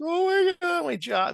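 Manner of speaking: acted-out sobbing wail, very high and very slow. Retelling coworkers being consoled in cubes, imitating crying coworkers. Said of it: "They're crying".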